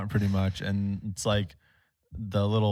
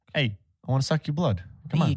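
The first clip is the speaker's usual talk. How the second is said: put-on Boston accent, pitched up high; 5 semitones higher than usual. Voicing the boston vampire the group is inventing: put-on boston accent. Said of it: "I can't do a Boston accent".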